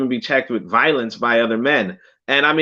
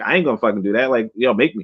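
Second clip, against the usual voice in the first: put-on brash, cocky, defiant kid voice; 4 semitones lower than usual. Acting out a son told to sit down: imitating a son refusing to sit. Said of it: "and he's like".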